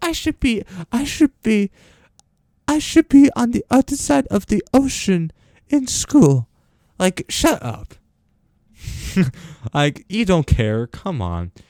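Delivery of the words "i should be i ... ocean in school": very high, stupid-sounding, put-on Swedish accent. Quoting a girl the speaker is mocking, in a mocking Swedish accent. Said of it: "her stupid Swedish accent".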